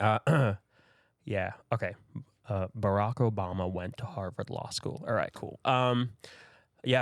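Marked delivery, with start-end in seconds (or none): 2.8-5.0 put-on general American accent. Asked to show off an accent, a trained actor speaks in an American accent. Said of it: "can you give us like a Canadian or like American accent?".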